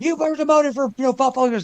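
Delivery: high, hard yelling. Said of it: "Shang's yelling at him like".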